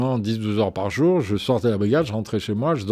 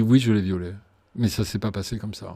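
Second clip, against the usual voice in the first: usual speaking voice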